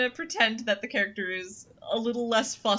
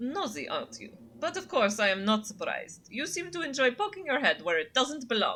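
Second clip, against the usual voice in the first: bad, wandering put-on French accent; 4 semitones higher than usual. Reading a snobby cat's lines in a game: bad French accent. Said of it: "It's supposed to be French".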